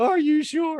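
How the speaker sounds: shrill, very high, loud, tearful crying. Retelling how she asked while holding the lease: imitating someone crying.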